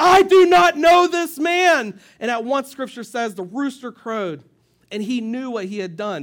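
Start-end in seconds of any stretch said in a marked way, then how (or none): 0.0-2.0 put-on angry, frustrated, very drawn-out, slow, loud voice. Retelling Peter's third denial, acting out Peter's mock anger. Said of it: "the anger in his voice and the frustration".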